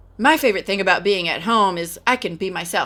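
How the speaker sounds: ordinary delivery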